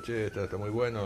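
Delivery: plain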